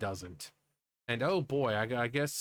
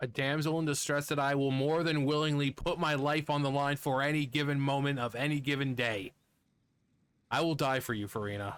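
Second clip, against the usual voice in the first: smug, preening, self-satisfied tone. Vowing to put life on the line for someone: smug. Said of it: "That sounded so smug".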